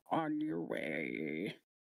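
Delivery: very deep, low, drawn-out creature grumble. Narrating a game, voicing a figure in the water after a player lands there, grumbling. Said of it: "he grumbles a bit and he goes".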